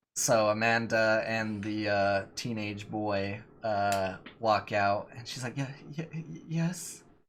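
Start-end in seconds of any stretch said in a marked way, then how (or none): 5.6-7.0 meek, high, whimpering "yes". The narrator voices Amanda as she walks out, Amanda whimpering. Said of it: "they're in the back like whimpering".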